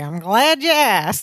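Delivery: put-on, overdrawn, hammed-up Texas accent. Retelling a scene where Balky answers Larry, in Balky's overdrawn Texas accent. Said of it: "talking like in this overdrawn Texas accent".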